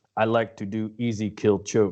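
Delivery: put-on Russian-accented English throughout. Quoting how someone with a russian accent says a line, russian accent. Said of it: "He's got that Russian accent, and he says".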